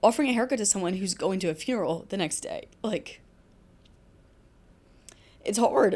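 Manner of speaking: emotional voice, words choking up. A barber, sharing a rewarding part of the job, speaks choked up. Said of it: "I get I'm getting choked up".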